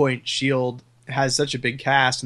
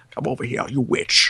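put-on acted leering elderly man voice. Arguing over who they want, the speaker does old lecherous Sean Connery. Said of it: "old lecherous Sean Connery".

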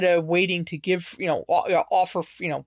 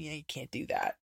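much softer, very quiet, barely audible. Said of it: "did very quietly say to them".

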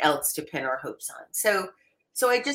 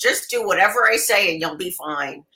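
put-on loud elderly woman voice; 2 semitones higher, 5 dB louder than usual. Speaker imagining becoming an elderly woman full of advice, in a put-on elderly woman accent. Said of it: "How'd you like that accent?".

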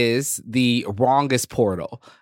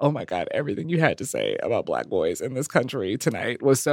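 emotional, tearful gushing while crying; 4 dB quieter than usual. Retelling a woman who came up crying after the set: imitating a crying woman.

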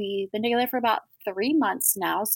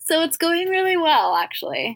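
cheerful, content, happy voice, pitched up; 8 semitones higher, 4 dB louder than usual. Speaking about the man she is seeing, sounding happy. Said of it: "You sound happy".

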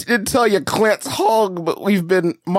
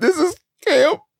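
put-on high, teary, whining crying child voice. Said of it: "my son keeps getting on".

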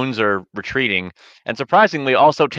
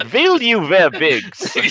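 higher-pitched, very fake, put-on German accent; 8 semitones higher than usual. Retelling an audio interview, the speaker quotes the interviewer in a very fake German accent. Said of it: "with a very fake German accent".

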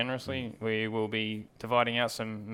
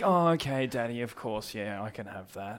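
child voice, fake casual, pretending not to care. Mimicking a kid who is trying to sound like they aren't desperate: imitating a kid faking not desperate. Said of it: "trying to sound like they really aren't desperate for something".

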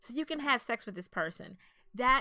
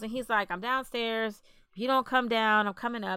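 usual speaking voice

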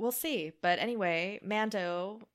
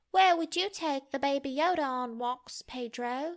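high child's put-on British accent; 6 semitones higher than usual. Retelling a question put to Pedro, in a child British accent. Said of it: "Your child British accent is so good".

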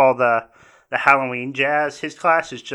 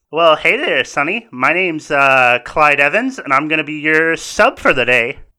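loud, big, folksy, casual and friendly tone; 6 dB louder than usual. Voicing the substitute teacher as he greets a student at the desk, in Clyde Evans voice. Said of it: "It is a young, probably about in his late 20s, early 30s, substitute teacher. / It is a young, probably about in his late 20s, early 30s, substitute teacher. / Evans gets up and he says, / probably ab".

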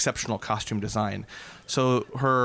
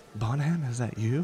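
in a playful way. A character calls out to Bonham after a whisper in his ear, playful. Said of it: "in a kind of a playful way".

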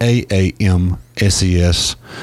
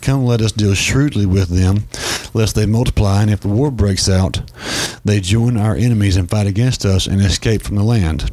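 ordinary talk, nothing marked

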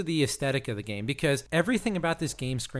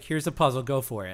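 ordinary delivery

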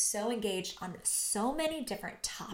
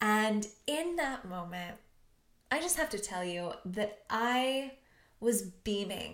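ordinary talk

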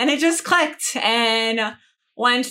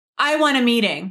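acted, aggressive delivery. Retelling walking up to demand a meeting: imitating own aggressive demand. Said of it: "so aggressive".

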